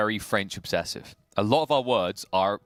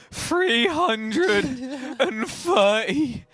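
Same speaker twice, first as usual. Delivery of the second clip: anguished announcer voice, much higher and louder; 3 dB louder than usual. Announcing the pull number, in a pained, tortured voice. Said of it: "the pain and torture that has to exist in your voice".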